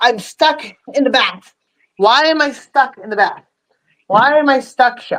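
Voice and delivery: talking in a pet dog's voice. Voicing the pet dog stuck in the bath: voicing Ginger the dog. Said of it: "she's like".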